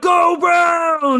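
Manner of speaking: excited fan cheer. Imitating TJ Stancliffe cheering when his team wins: imitating excited cheer. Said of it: "He's so excited".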